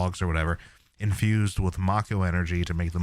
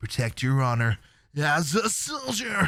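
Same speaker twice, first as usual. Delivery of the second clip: slow, swooping, high-pitched speech; 9 semitones higher than usual. Mocking a disliked voice actor's delivery: imitating Zack's voice actor. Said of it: "the voice actor for Zack just does not do it for me. He's like".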